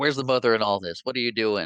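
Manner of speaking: put-on hollering voice. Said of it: "she hollers and calls them little monsters".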